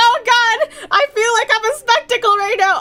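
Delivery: high panicked blurt. Retelling being stared at by booth helpers: retelling own panic.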